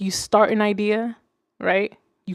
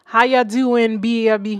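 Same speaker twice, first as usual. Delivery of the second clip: put-on Jamaican accent. Streamer greeting a viewer named Ken, in a fake Jamaican accent. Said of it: "Just fake ass Jamaican accent".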